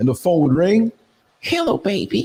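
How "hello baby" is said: imitated woman's voice. Retelling a phone call at the gym, put-on woman's voice. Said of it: "it was a straight woman's voice".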